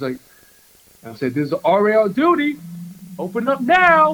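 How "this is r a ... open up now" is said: very high, loud, rising, commanding shout. Retelling knocking on a party room door: retelling a shout. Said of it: "And I'm just shouting".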